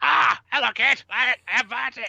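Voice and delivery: squeaky irritating bird voice. Describing how they imagine a beaked character sounding, in a high-pitched annoying bird voice. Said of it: "very high-pitched, annoying bird voice".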